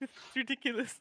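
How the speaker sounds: high voice, giggling and laughing through words. Reacting to a baby turtle dying in the game: laughing while talking. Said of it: "I can't stop laughing".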